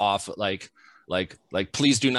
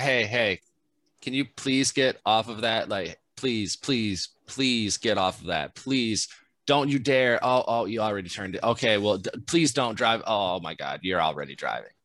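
put-on strict voice. Retelling a security worker warning someone off the steamroller, imitating a strict security guard. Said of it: "he had to be a little bit strict in his voice".

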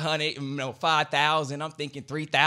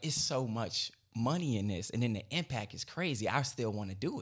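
ordinary delivery

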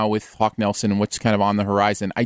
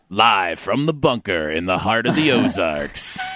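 put-on movie-trailer narrator announcer voice; 2 semitones lower than usual. Urged by a co-host to do the show intro, speaker uses a movie trailer voice. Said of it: "Aaron does a really good movie voice".

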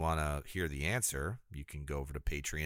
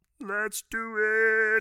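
loud, very high-pitched silly voice; 8 dB louder than usual. On a show's after-show, doing something silly for an absent co-host: Kermit the Frog voice. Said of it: "What was that voice?".

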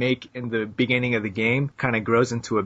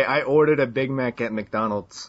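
usual speaking voice

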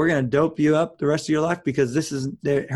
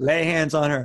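ordinary talk

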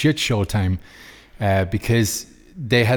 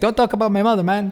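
put-on Mexican accent, higher pitch; 11 semitones higher than usual. Retelling a press conference quarrel: imitating Canelo in a Mexican accent. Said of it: "That's my Mexican accent".

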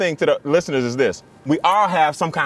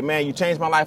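ordinary delivery

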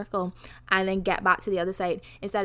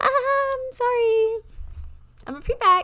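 put-on, very high, jokey, slow drawn-out sorry; 4 dB louder than usual. A prefect retells apologizing after being told not to walk through: mock-joking apology. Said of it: "I was trying to jokingly be like".

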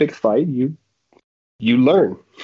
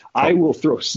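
ordinary talk

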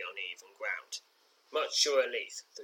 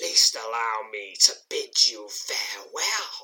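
furious hissed words; 4 dB louder than usual. Narrating an adventure, voicing the foe speaking in your mind: angry hissing voice of Trubdock. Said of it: "hisses the angry voice of your foe".

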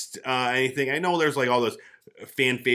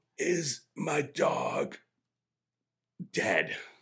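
mock dying gasp, higher and quieter; 3 semitones higher, 5 dB quieter than usual. Acting out a speculated final scene, imitating a dying breath. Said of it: "he's on his dying breath, and he's like".

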